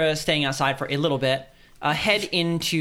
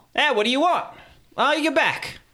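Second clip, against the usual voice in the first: very high-pitched character voice; 10 semitones higher than usual. Voicing the character Morgan as the party turns around: Morgan character voice. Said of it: "That is not her voice".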